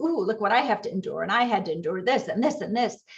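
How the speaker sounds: ordinary talk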